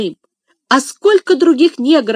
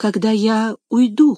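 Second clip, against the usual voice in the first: finishing uncertainly, unsure tone. Narrator reads a girl finishing her request to her father, uncertainly. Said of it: "потом неуверенно договорила".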